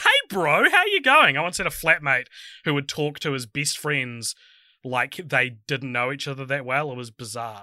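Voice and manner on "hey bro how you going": very high, stiff, overly polite voice. Greeting a co-host as if barely acquainted: put-on stiff acquaintance greeting. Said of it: "speaking like I don't know you that well".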